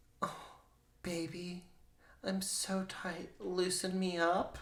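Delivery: sultry, high, hushed, sensual voice. Mocking how the other speaker read something aloud, in a mock phone-sex-line voice. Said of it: "like you were on like a phone sex line".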